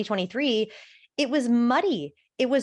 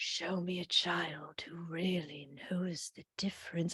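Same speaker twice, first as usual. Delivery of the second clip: very hushed, quiet, intense whisper; 5 semitones lower, 13 dB quieter than usual. Mocking a film line's delivery: imitating Jude Law's whispery intense delivery. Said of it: "a whispery, intense way".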